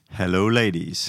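American accent. Greeting the ladies when asked to: American accent. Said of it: "it sounds like your American accent".

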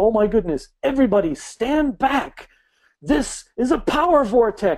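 acted, high, startled gasping exclamation of awe. Retelling a workshop teacher's reaction to a clump of trees: imitating a gasping awed exclamation. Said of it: "And she gasps".

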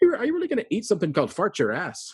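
put-on very high, swooping, sing-song Irish accent. Retelling what a companion asked in the line for farturas, in Inda's Irish voice. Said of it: "in his lovely Irish voice".

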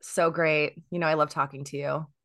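sounding sarcastic. A podcast guest answers the host's greeting at 8 a.m., sounding sarcastic. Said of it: "that sounded very sarcastic".

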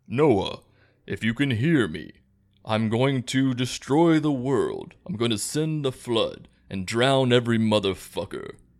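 grand, proclaiming godlike voice from above. Retelling the Noah story, the speaker voices God: James Earl Jones God voice. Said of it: "my God voice is James Earl Jones".

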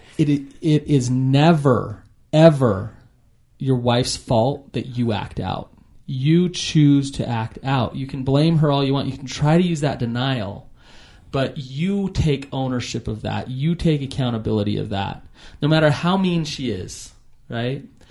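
normal talking voice

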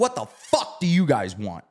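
hostile, in-your-face, aggressive, swooping voice. Retelling how a kid confronted two strangers: imitating an aggressive kid. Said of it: "All aggressive".

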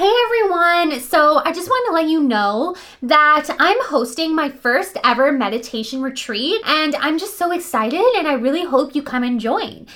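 question-like upward lilt on every phrase end. Demonstrating how not to sound when stating a fact, with upward inflection. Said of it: "an upward voice inflection".

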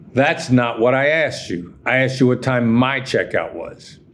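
surly, bad-tempered, rude and irritated snap. Retelling his argument with a hotel clerk, retelling a rude tone. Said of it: "with a bad tone of voice".

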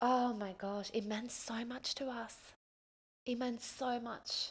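slow, moved, emotional delivery. Recalling how she and Brody got the house, the speaker is getting emotional. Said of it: "I'm actually getting emotional talking about it".

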